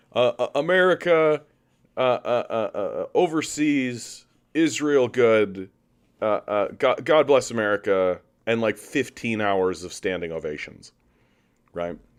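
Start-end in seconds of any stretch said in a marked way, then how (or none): 0.2-8.2 slow, stumbling, rambling speech, uh after uh. Answering a viewer's question with an impression of Biden's speech: Biden State of the Union impression. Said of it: "here's my impression of the State of the Union".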